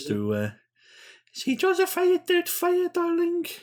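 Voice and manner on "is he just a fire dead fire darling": mock elderly Scottish woman voice. Joking around with the others, deliver the line as a Mrs. Doubtfire impression. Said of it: "Was that your uh, Missus Doubtfire impression?".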